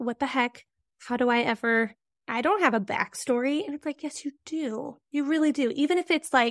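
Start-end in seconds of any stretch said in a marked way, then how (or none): none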